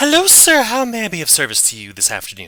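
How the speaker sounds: very high ghostly lady voice. Voicing an ethereal lady who appears and offers service: ethereal lady voice. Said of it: "an ethereal lady appears".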